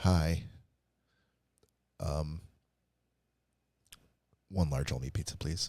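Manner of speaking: guilty, confessional-sounding tone. Retelling how his dad phoned in a pizza order, imitating a guilty-sounding caller. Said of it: "he would sound so guilty and like this".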